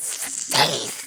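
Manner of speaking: put-on evil creature voice. Imitating how the Pokemon sounds: evil Scyther voice. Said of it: "He sounds all evil".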